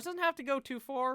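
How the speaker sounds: cracking voice. Announcing a mock draft pick, voice cracking. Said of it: "My fucking voice cracked like I'm twelve years old".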